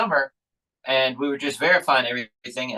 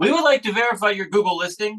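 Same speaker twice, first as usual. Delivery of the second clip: put-on Indian accent, pitched up; 8 semitones higher than usual. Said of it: "it's like an Indian accent".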